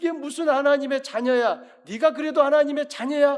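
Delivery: high, loud mocking sneer.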